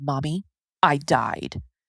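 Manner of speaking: put-on child voice, dead serious and flat. Retelling what a four-year-old said, eye to eye: imitating a dead serious child. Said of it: "dead eye, just dead serious".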